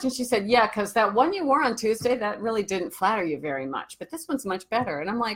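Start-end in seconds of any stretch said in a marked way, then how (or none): 0.5-5.0 acted-out backhanded, barbed, stinging tone. Retelling a coworker's remark at work: imitating a coworker's backhanded compliment. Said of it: "she always had these backwards compliments".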